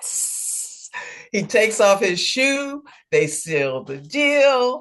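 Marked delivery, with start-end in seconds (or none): 0.0-0.9 soft, unvoiced whisper, barely holding back glee. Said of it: "keep a straight face 'cause he's going".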